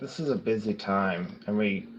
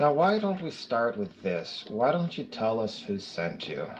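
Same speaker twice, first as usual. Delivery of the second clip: gentle, kind, tactful, diplomatic coaxing tone. Questioning a tied-up captive about who sent them: kindest, most diplomatic tone. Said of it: "in my kindest, most diplomatic tones".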